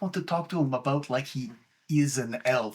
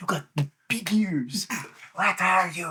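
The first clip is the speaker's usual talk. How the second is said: whispering, slower pace; 3 semitones higher than usual. The father questions the ghost he has been told about, whispering. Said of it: "I have to whisper".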